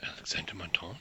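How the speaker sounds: barely voiced, hushed and breathy whisper. Voicing a character who says a suspect's name: whispering. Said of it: "he whispers it".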